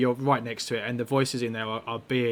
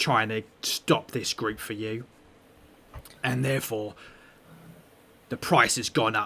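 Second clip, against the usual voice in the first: gruff goblin character voice; 2 semitones lower than usual. Voicing the second party in a deal over a map, in a gruff goblin-like voice. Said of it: "the other voice is like is really gruff and and sounds sounds more goblin-y".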